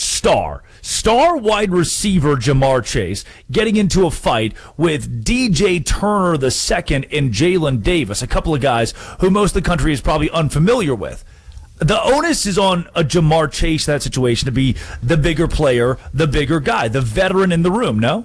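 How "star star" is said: heavy, punched stress on star. Speaking about the star wide receiver's fight, stressing the word "star". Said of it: "I want to emphasize that word".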